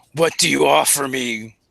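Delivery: low, rough, gravelly rumble of a tusked brute. Narrator voices a tusked creature speaking to the listeners, in deep gravelly voice. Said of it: "in a d- deep gravelly voice".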